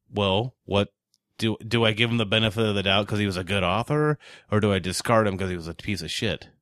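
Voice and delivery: ordinary talk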